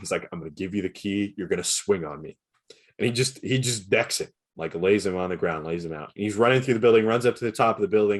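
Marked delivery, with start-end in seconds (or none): 0.3-2.4 put-on whisper. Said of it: "whispering to him".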